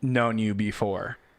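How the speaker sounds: ordinary talk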